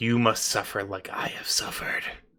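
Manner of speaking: breathy, whispered, growly werewolf monster voice. Game narrator voicing a werewolf pointing a clawed hand at two characters, in a growly werewolf voice. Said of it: "In his growly werewolf voice".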